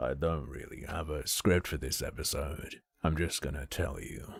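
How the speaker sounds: very quiet, whispered, breathy, creaky wet vocal fry. Repeating the episode's opening line after the other host, imitating wet vocal fry. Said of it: "he's got quite a dry vocal fry. Mine's wet".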